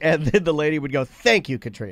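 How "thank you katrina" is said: patronising, condescending, talking-down thanks. Retelling how a lady called someone by the wrong name, mimicking condescension.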